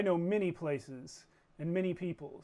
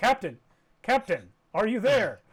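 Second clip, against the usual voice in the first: booming, loud AI voice with swooping, swinging pitch; 5 semitones higher, 10 dB louder than usual. Voicing the ship AI calling the captain over comms: Prime's voice. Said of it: "you hear Prime's voice saying".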